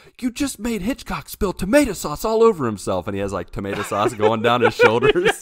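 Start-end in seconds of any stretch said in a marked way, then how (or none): 0.2-3.1 shrill, very high, swooping yell. Retelling a scene from a TV episode: imitating someone yelling. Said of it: "someone yells and is like".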